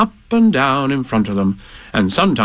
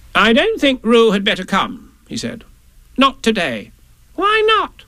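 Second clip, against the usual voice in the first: ordinary delivery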